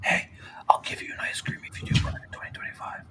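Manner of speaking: unvoiced whisper.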